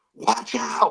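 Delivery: mock, high, urgent yelling shout. Retelling a warning to the quarterback during a game: imitating someone yelling. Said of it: "I'm yelling at my quarterback".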